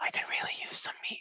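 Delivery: rapid, breathy, very quiet whisper. Voicing a character whispering a request into a bag: whispering. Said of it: "So you're whispering into the bag".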